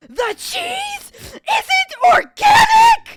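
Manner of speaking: put-on screaming voice. Retelling how a customer started screaming: imitating a customer screaming. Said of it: "this woman just starts screaming".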